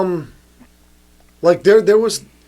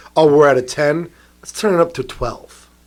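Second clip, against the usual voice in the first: plain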